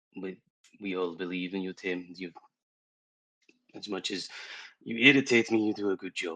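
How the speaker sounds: very quiet, hushed, barely audible half-whispered aside. A player's character half-whispers to tame as he steps forward to speak: half-whispering. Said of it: "I whisper to him".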